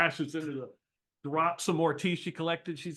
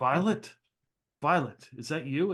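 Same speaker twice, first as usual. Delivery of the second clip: mock-stunned, acted shocked disbelief. Retelling a scene where a man kneels before a girl: retelling stunned disbelief. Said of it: "looking at her in a look of like, oh my god".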